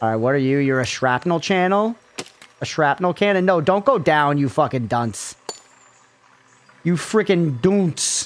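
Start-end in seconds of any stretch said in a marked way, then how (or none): 6.8-8.3 put-on British accent. Insulting a game unit while building a vehicle: British accent. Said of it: "I sound British when I said that".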